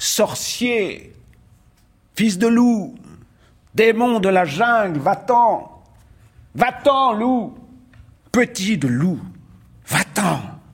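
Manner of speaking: slow, drawn-out, high-pitched shouting. The villagers cry out at the boy, shouting. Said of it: "et les villageois crièrent".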